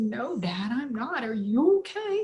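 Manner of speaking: speaking through tears, crying. Telling how a talk with Dad went, repeating own words: retelling own tearful words. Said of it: "And I'm crying".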